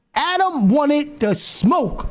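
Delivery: slow, drawn-out, stretched words. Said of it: "Yo, Adam wanted to smoke".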